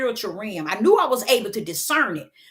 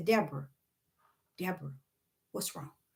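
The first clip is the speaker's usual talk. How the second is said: hushed, very quiet, low voice; 6 semitones lower, 13 dB quieter than usual. Retelling a voice the speaker heard calling their name: retelling a quiet voice. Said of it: "I hear this quiet voice say".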